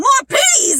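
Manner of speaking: acted out, very high-pitched, frantic freaking out. Retelling how the lunch lady answered a kid asking for more peas: Miss Piddlin freaking out. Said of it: "she would just freak out at everything".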